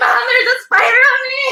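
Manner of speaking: frantic, very high shriek of panic. Retelling finding a spider on oneself, calling to Mom: imitating own panicked screaming.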